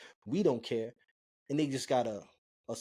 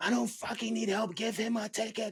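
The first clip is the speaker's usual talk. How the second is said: mock livid, high, top-of-the-lungs furious yelling; 9 semitones higher than usual. Retelling a young woman's outburst at a cop: imitating someone screaming. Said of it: "screaming at the top of her lungs".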